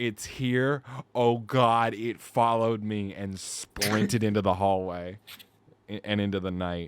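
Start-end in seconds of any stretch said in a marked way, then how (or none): 0.0-1.9 top-of-the-lungs, high, drawn-out panicked scream. Retelling being told the panther was here, retelling a top-of-lungs scream. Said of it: "I screamed like at the top of my lungs".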